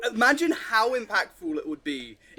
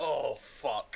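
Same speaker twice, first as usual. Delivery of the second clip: word grunted out in annoyance; 8 semitones lower, 8 dB quieter than usual. Retelling own reaction to watching a scene: imitating own annoyed grunt. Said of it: "I feel like I audibly just, like, grunted".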